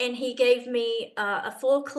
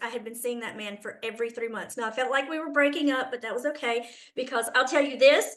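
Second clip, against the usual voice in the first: ordinary delivery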